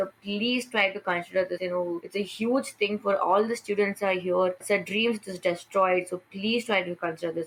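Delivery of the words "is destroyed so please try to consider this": normal talking voice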